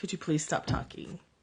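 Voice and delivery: polite, acted-out manner. Telling how they ask people talking at the movies to stop; retelling a polite request. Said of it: "I'm actually really polite".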